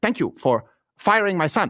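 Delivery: choppy, clipped, carefully articulated staccato words. Quoting a man who speaks in a staccato way, clipped, staccato delivery. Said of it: "He has staccato way of speaking".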